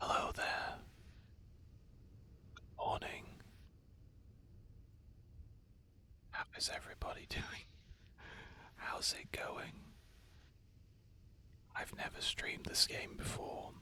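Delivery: soft, very quiet, hushed whisper. Greeting viewers at the start of a stream: whispering. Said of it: "Why am I whispering?".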